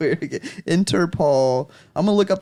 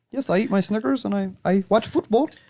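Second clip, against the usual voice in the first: fake, put-on, vague generic European accent; 3 semitones higher than usual. Imitating a european describing their habits, in a put-on european accent. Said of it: "That was an interesting European accent".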